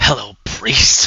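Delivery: words spat out as a hiss. Narrating a scene, voicing a woman who glowers at you, hissing. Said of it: "just hisses".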